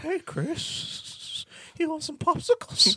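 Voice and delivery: very high, put-on cartoony character voice. Asked to do the Family Guy impression, Herbert voice. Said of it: "Do that Family Guy impression of the fucking Herbert".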